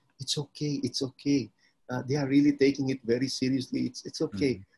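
quiet, hushed stage whisper under the breath. Retelling what the bishop half-whispered to him: imitating someone half-whispering. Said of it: "he whispered to me and he said".

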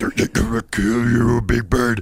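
put-on death metal monster voice. Making fun of death metal singers, Cookie Monster death metal voice. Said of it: "death metal guys who just sound like".

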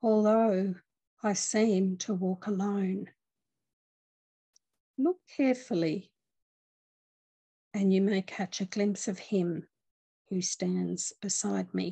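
slow, unhurried, deliberate reading-aloud delivery. Reading a passage aloud to listeners, reading slowly. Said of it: "I'm just going to read it slowly".

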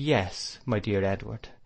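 plain reading voice

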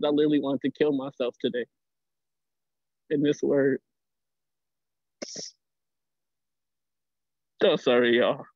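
tearful voice, fighting to hold back tears. Speaking to the room in a moment of thanks, holding back tears. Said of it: "I'm trying to hold back tears".

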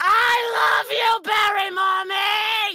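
very slow, very high, shrill, drawn-out all-out scream. Performing a requested line for a donation: screaming at the top of lungs. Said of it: "It just was a yell".

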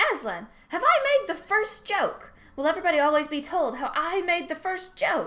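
eager, perky sing-song bird voice, very high, loud. Reading a story, a jackdaw perched on a cab horse's head calls to the lion, perky jackdaw voice. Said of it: "But one perky jackdaw".

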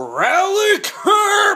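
very high, shrill, swooping, loud cheering shout. Showing viewers how to yell the cheer: yelling. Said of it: "And yell".

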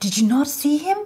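astonished high voice. A palace sweeper answers a visitor's question about the palace's owner, retorting, even more surprised. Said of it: "retorted the sweeper, even more surprised".

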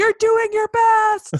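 very loud, high-pitched, slow yelling.

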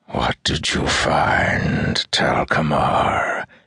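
sneering, mocking, hissed taunting tone. A shadow questions the man who found the mirrors, with a mocking hiss. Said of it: "It hissed mockingly".

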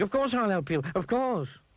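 in a panic. Mr. Mean, his nose turned into a carrot, answers the old washerwoman: panicked. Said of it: "he cried in a panic".

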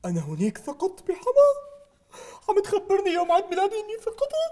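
words broken up by weeping. In a comic sketch, a man addressed as 'sir' answers the other speaker, crying. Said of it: "لا تبكي يا سيدي".

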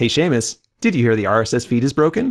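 plain

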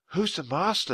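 high, hushed half-whisper. Narrator reading Annie's question to Jack, half-whispered. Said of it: "she whispered".

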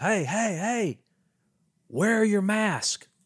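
very high, shrill, drawn-out hollering scream. Retelling a man who drove up and yelled at the girls; imitating a man screaming. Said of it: "he starts screaming at the girls".

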